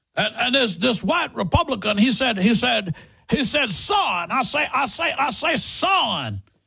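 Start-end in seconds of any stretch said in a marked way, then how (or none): 2.4-6.4 cartoon rooster voice, much slower. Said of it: "his best foghorn leghorn".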